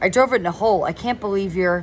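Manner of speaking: plain reading voice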